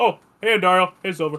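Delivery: put-on old man voice. Voicing Cairn greeting Andariel and Silver: Cairn's old man voice. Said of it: "He still has the old man voice".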